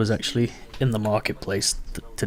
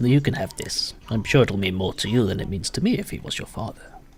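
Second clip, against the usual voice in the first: put-on old man character voice. The game master, as an old man, speaks to a player's character: old man character voice. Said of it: "And the old man that greeted you earlier, he walks over as well. / like the kind of warm smile a grandparent gives. / he walks over as well. / And the old man that greeted you earlier, / and he gives".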